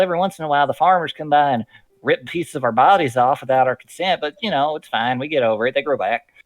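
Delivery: put-on old hillbilly voice. Retelling how a game master voiced talking corn stalks: old hillbilly voice. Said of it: "a nice old hillbilly kind of voice like this".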